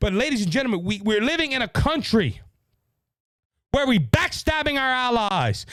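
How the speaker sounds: open, heated anger. Speaker addressing ladies and gentlemen after apologizing for being angry, angry. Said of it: "I am angry. I apologize for being angry".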